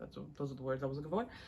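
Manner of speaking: way too fast, rushed, low voice. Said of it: "I'm talking way too fast".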